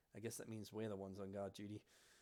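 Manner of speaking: soft, close half-whisper. Narrating a scene where the twin leans down to your ear, half-whispering. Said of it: "leans down and whispers into your ear".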